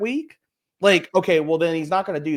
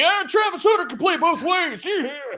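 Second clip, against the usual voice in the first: high-pitched, shouted, mock screaming ranting voice. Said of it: "scream at my TV like".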